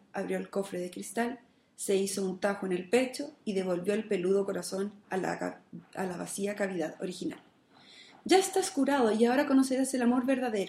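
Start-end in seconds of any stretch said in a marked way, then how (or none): 8.2-10.7 beaming, joyful, radiant, high exclamation. Narrating a tale, the maiden speaks to the one she has just healed: radiant exclamation. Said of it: "exclamó la doncella, radiante".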